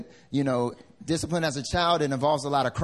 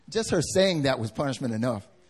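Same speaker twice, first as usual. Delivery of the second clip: ordinary delivery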